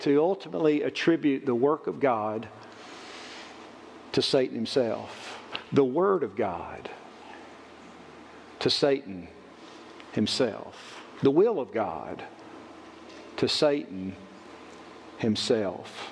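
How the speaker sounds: slow, soft, deliberate, drawn-out phrasing. A speaker addressing his listeners, said slowly. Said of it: "I say that kind of slowly".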